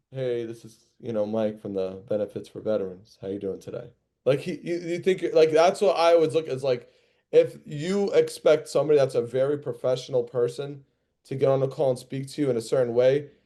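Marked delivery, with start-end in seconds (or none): 0.1-3.9 flat, depressed tone, much lower and quieter. Showing how a caller from Benefits for Veterans might answer the phone, flat and depressed-sounding. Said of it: "you sound like you're depressed".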